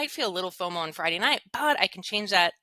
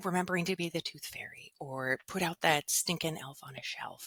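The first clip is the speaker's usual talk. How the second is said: hushed whisper, under the breath; 2 semitones lower, 7 dB quieter than usual. A mother speaking while her kids are upstairs, whispering. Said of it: "I'm s- whispering because my kids are upstairs".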